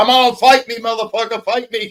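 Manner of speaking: goading taunt. Doing an impersonation of the other speaker wanting to fight: impersonating the other speaker picking a fight. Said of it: "when I do my impersonation of you and I go".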